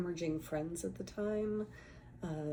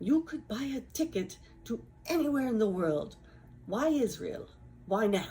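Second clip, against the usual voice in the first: put-on Israeli-accented speech; 5 semitones higher, 7 dB louder than usual. Speaker recounts what one of two women demanded of him, in an Israeli accent. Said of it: "this is my best Israeli accent".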